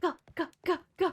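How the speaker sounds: breathing heavily. Playing a game, the speaker finds they can dress as a sailor; heavy breathing. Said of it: "*heavy breathing*".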